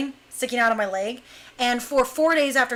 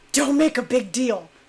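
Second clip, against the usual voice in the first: put-on whispered words. Retelling what Jason whispered while holding the speaker in a headlock, retelling a whisper. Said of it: "he whispers in my ear".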